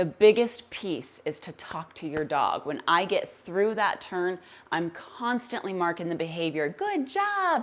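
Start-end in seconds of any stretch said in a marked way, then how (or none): 6.7-7.6 high-pitched cartoon voice. Praising the dog after a turn, in a high-pitched Mickey Mouse voice. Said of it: "That high-pitched Mickey Mouse voice".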